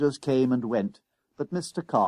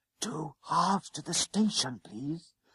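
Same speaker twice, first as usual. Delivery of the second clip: soft, timid, low, held-back voice; 2 semitones higher, 7 dB quieter than usual. A boy repeats himself after the conductor tells him to speak up; not daring to raise his voice. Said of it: "not daring to raise his voice".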